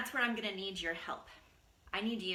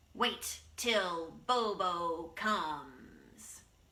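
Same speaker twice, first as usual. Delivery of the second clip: very slow, drawn-out animal snarl; 2 semitones lower than usual. Storyteller has the listeners join in snarling the bobcat's line: snarling bobcat voice. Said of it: "We're going to snarl together".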